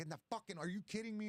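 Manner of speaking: very high, vicious, exasperated, nasty angry snap. Retelling snapping at her while loading the jet ski: retelling own nasty angry outburst. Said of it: "I'm being nasty".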